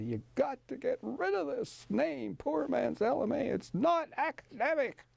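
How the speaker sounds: put-on high-pitched Italian accent. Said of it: "in his Italian accent".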